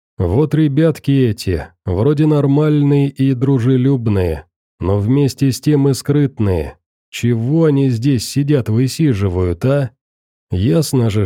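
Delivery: ordinary delivery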